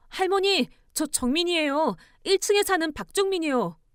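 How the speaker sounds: high, shaky, trembling, frantic and urgent calling out. Reading a story, voicing a neighbor at the door before dawn: trembling, urgent voice. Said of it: "목소리가 떨리고 있어서 뭔가 엄청 다급해 보였어요".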